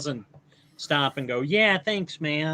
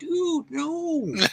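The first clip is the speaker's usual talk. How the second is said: squeaky, very high, badly done put-on actor impression; 13 semitones higher than usual. Describing a movie scene, doing a bad Owen Wilson impersonation. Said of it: "my Owen Wilson impersonation".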